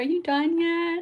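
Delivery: high pet voice with "mom" stretched out. A mom voices her pet calling to her from outside the room, voicing Nico. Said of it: "It's very much what I hear in his voice".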